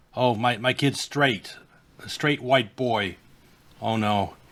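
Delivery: play-acted crestfallen, disappointed, dismayed tone. Imitating a parent asking her child if he's sure he's a boy: imitating a disappointed parent. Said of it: "she's all disappointed".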